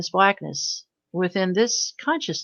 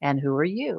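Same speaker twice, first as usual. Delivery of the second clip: lilting, sing-song tune; 3 semitones lower, 4 dB quieter than usual. Retelling own question to an unseen being, imitating own lilting voice. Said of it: "literally with a lilt in my voice".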